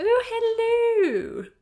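very high, loud, plummy, grand, long drawn-out hello. Imitating Mrs Bouquet from Keeping Up Appearances: Mrs Bouquet voice. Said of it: "I'm like Missus Bouquet. ... And she'd be like".

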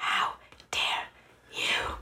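angry, seething, held-in whisper. Retelling own reply to people who only saw clips: retelling own whispered retort. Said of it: "You should, you should whisper it like that".

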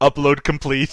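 plain

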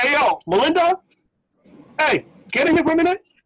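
high, put-on annoyed, fake-upset shout. Retelling calling Melinda over to see the ring, a fake upset shout. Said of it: "As if like I'm upset".

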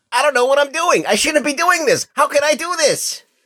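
very high, nervous, unsure-sounding voice. Answering a co-host's greeting during the show introductions with a Miles Morales impression. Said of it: "that was my Miles Morales impression".

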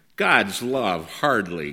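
cutting, sarcastic tone. Narrator reading the elder brother's reply: sarcastic reply. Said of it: "came the elder brother's sarcastic reply".

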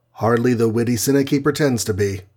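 ordinary delivery, nothing marked

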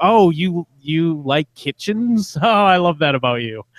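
play-acted patronizing, cartoonish, high and condescending. Describing how a woman says things, quoting her: imitating condescending tone. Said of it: "condescending way".

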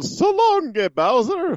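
put-on very high, swooping, stretched-out Italian accent. Explaining a Mario 64 Bowser fight, quoting Mario, Mario Italian accent impression. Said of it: "with an Italian accent".

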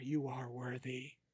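hushed, very quiet half-whisper. Describing a mysterious voice to a player as he leaves: half-whispering voice. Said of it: "you hear a voice whisper in your ear".

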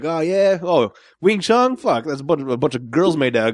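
mocking, scornful, dismissive taunting tone. Telling of a guy who refused to fight, imitating his trash talk. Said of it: "he goes into shit talking mode".

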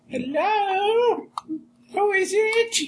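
put-on elderly woman voice, very high-pitched. Asked by a fellow player to do an old lady voice, answering at the front door. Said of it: "Do an old lady voice".

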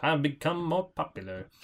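acted calm, quiet voice. Imitating the older Cary Grant, slower and calmer: Cary Grant voice. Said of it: "It's a good Cary Grant voice".

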